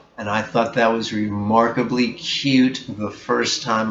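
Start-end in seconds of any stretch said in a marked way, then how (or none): none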